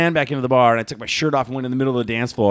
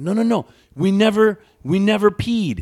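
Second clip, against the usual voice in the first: put-on broken Spanish, much higher pitch; 9 semitones higher, 3 dB louder than usual. Retelling what they told the police, in their best broken Spanish. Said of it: "my best broken Spanish".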